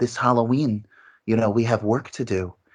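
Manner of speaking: smooth, monotone ghost voice. Praising an actress as a voice actor: monotone smooth Sheri Moon Zombie voice. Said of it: "it's monotone when she plays the ghost".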